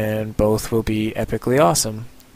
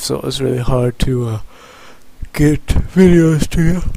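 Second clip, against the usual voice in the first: yawning while talking, louder and higher; 3 semitones higher, 5 dB louder than usual. Talking to viewers in a video, talking while yawning. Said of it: "I shouldn't talk while yawning".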